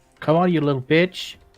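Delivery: yelling, taunting tone. Taunting a troll in character during combat: shouting a taunt. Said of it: "You feel like you shouted".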